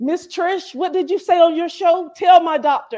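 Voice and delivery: high, loud, eager pleading tone.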